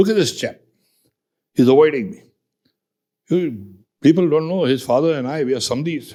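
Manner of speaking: mock, very loud, booming voice. Speaker recounts a general calling him out before everyone, retelling a very loud remark. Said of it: "in a very loud voice".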